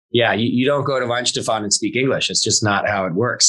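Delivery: ordinary delivery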